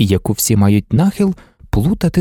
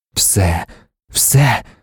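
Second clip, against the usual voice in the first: ecstatic, rapturous whisper; 5 semitones lower than usual. A man answers Marta, an ecstatic whisper. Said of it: "шепотів він у екстазі".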